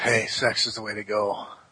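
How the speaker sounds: eerie, distant-sounding, low and creepy voice. Asked whether he even needs to weigh in, answering in a creepy voice. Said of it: "You sounded creepy".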